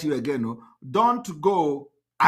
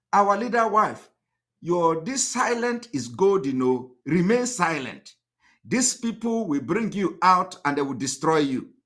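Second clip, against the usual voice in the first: ordinary talk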